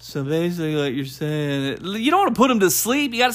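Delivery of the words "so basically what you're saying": mock dull tone, lower and quieter. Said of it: "all you said was like".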